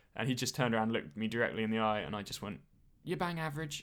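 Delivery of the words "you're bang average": feeble, high, meek little voice. Recalling what the speaker said when a man turned and looked them in the eye, retelling a feeble voice.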